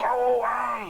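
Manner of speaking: hoarse, rasping, very high voice. Voicing someone answering a knock at the door: raspy voice. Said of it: "you hear a raspy voice go".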